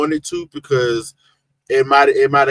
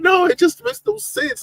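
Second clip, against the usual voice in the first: put-on disappointed voice, higher pitch. Retelling a chat member's disappointed reaction: impression of Samantha's voice. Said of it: "trying to make an impression of her voice".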